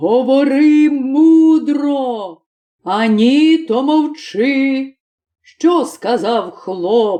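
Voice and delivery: slow, furious, enraged devil voice. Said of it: "Полетів чорт в пекло, та й починає найстаршому чортові, [name]ові, / «Що?» – крикнув, що аж ціле пекло стряслося, розлючений [name]. / та й починає найстаршому чортові, / розлючений [name]".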